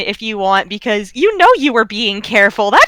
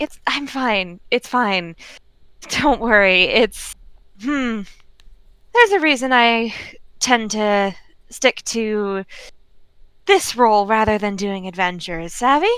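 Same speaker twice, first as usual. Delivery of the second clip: soft, gentle, kindly reassuring tone; 6 dB quieter than usual. Narrating a character who gently waves you off, gently waving off concern. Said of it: "he gently waves you off and is like".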